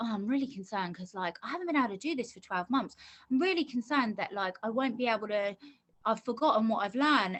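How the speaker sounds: plain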